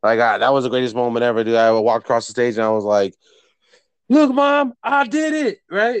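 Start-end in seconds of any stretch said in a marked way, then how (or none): 4.1-5.6 mock top-of-lungs yell, very high, slow, triumphant. Recalling walking across the stage and calling out to Mom: retelling a shout. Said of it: "At the top of my lungs".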